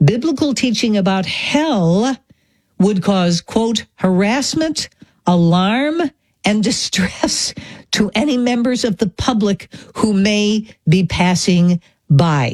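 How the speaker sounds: slow, deliberate, each word laid out in turn. Speaker quotes a report to listeners, saying it slowly so they get it. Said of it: "I'm going to say this slowly".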